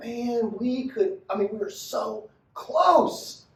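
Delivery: very slow, drawn-out, frustrated tone. Speaker mimicking how the listener sounds when they fall short, mock-frustrated. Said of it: "I hear it in the tone of your voice".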